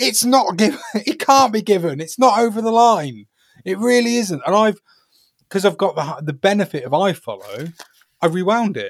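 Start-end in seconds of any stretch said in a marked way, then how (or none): 0.0-4.4 high, insistent mock screaming. Retelling watching a disallowed goal given, imitating own screaming. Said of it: "I'm literally screaming at my computer".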